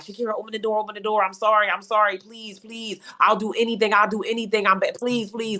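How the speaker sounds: frantic, desperate, repeated pleading. Retelling a man banging on the locked bathroom door, imitating someone begging. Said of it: "Like he just would beg".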